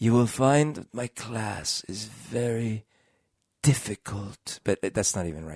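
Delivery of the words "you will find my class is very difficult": measured, slow, drawling teacher voice, every word drawn out. Speaker tries to show how Snape talks after saying they can't: Snape voice. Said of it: "So how does Snape talk?".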